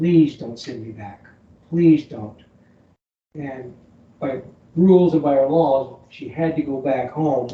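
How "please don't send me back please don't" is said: tearful, desperate, broken-down begging. Retelling an exchange student's plea not to be sent home: imitating someone begging. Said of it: "She just broke down just begging".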